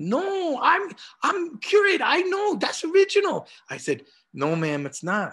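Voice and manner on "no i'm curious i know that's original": put-on Korean-accented English, very high pitch. Retelling a disagreement with a woman, imitating her Korean accent. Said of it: "in her Korean accent".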